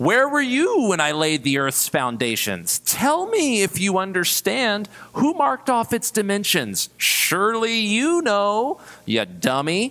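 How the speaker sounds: sarcastic, scolding delivery with high, swooping pitch. A speaker shows listeners how to read a Bible passage, reading sarcastically. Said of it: "Did any of you read it sarcastically?".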